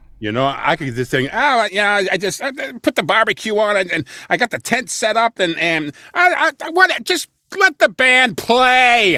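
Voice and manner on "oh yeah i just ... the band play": very high, loud rambling voice, stretched out. Showing a bad impersonation of Uncle Roy as a character voice: impersonating Uncle Roy. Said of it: "that's my impersonation of Uncle Roy".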